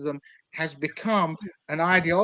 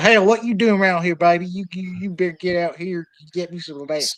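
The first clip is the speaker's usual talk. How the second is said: awful, horrible put-on Southern accent; 4 dB louder than usual. Retelling what cops in Springfield, Missouri say, in a horrible Southern accent. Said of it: "have a horrible southern accent".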